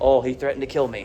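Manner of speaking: ordinary talk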